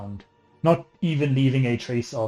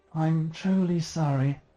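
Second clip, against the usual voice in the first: ethereal, high, layered voice like many voices at once; 6 semitones higher than usual. Narrating a scene, voicing a creature speaking to Shadow in an ethereal voice. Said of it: "you hear in this almost ethereal voice".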